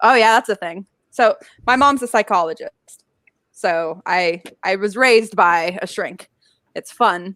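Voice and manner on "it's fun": dripping, very sarcastic tone. Saying that being raised by a shrink is fun: very sarcastic. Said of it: "And I say that very sarcastically".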